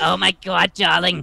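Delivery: put-on grumpy, disgruntled aunt voice. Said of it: "let me get into the voice first".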